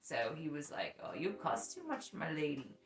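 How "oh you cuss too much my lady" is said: clumsy put-on Irish accent. Retelling what a man with an Irish accent said: imitating Garrett's Irish accent. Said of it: "he speaks with an Irish accent".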